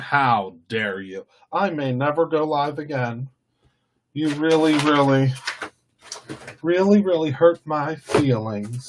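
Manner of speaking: hurt, offended tone laced with sarcasm. Reacting on a live stream to a viewer's thumbs down, sarcastic mock hurt. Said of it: "Can you hear the sarcasm?".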